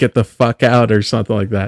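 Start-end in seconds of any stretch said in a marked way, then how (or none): 0.0-0.9 acted-out yell. Describing a movie scene where the final girl shouts at the group, retelling a shout. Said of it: "she just shouts at them like".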